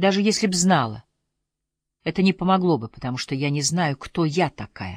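plain

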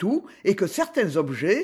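plain reading voice

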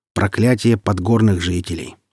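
ordinary delivery

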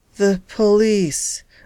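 muttered. Collapsed on the floor while his wife phones for help: muttered. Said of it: "muttered [name]".

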